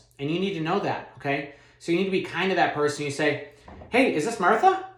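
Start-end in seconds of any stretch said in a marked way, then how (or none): 3.9-4.8 confident, loud, bright, rising high note on a name. Demonstrating how to open a phone call kindly, ending on a high note. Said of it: "I'm ending on a high note".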